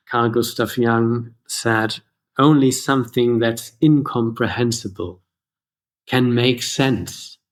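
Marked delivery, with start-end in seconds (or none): none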